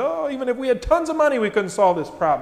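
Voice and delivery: dry, scoffing sarcasm. Retelling a story, the speaker acts out one man's answer to Jesus: retelling a sarcastic reply. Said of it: "Philip gets sarcastic and says".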